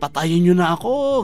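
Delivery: acted very loud shout. Recounting being about to be executed, retelling a very loud shout. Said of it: "Kaya sumigaw, pagka lakas-lakas na".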